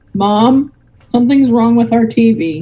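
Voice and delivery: ordinary talk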